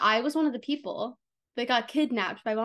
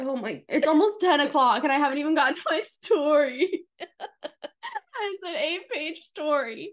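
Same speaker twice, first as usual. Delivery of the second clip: laughing to tears, higher pitch; 4 semitones higher than usual. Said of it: "I'm actually crying".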